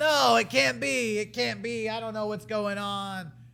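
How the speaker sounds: disbelieving, pleading tone.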